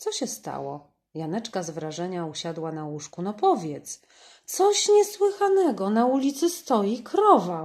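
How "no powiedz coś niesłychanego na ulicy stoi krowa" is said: thrilled calling out, very loud and high. Michaś, jumping on the windowsill, tells Janeczka something, calling out. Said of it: "wołał Michaś, skacząc po parapecie".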